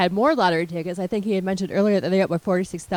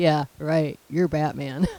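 put-on sarcastic voice, lower pitch; 4 semitones lower than usual. Recapping the episode, quoting Sam's reply to a guy claiming to be Batman: mock-sarcastic Sam impression. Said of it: "And sarcastically".

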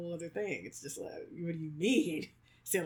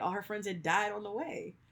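ordinary talk

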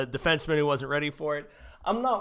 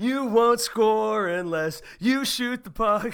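loud, high, drawn-out heckling yell; 7 semitones higher, 5 dB louder than usual. Recounting a drunk man at a hockey game, imitate him yelling. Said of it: "He starts yelling".

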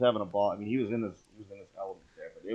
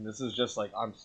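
plain

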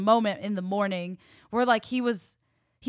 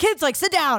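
stern, strict mom voice, pitched up; 7 semitones higher, 6 dB louder than usual. The speaker catches herself talking to the kids, imitating her mom's voice. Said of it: "I found my mom's like voice in me".

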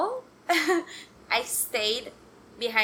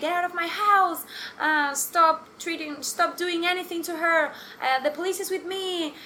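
frantic, high, panicked screaming; 6 semitones higher than usual. Retelling the mother screaming at the thieves: imitating someone screaming. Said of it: "she started screaming".

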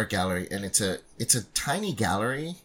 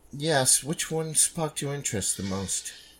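snooty, snobbish voice, pitched up; 5 semitones higher than usual. Voicing a gallery attendant greeting a visitor: snooty attendant voice. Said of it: "the snooty attendant".

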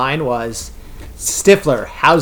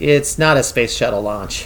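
put-on flat deadpan delivery; 3 semitones lower than usual. Recounting a character's reply in a scene, retelling a deadpan line. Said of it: "And Jessica deadpans".

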